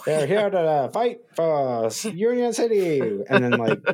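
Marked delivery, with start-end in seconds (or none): 0.0-3.0 very high, slow, old-timey faux newsreel announcer voice. Describing a show's narration, imitating its faux reporter voice. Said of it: "that like faux reporter voice".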